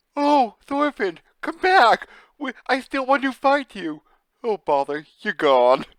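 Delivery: sing-song, swooping cartoon bear voice. Voicing a bearded character in a picture, in a Winnie the Pooh voice. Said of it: "It has the Winnie the Pooh voice".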